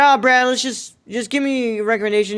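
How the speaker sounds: normal talking voice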